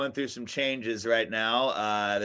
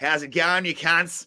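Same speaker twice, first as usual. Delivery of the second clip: exaggerated put-on Australian accent, pitched up; 6 semitones higher, 4 dB louder than usual. Retelling how a man opened the green room door, greeting them in his funniest Australian accent. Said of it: "in his funniest Australian accent he could do".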